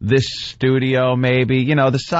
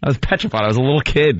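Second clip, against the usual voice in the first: plain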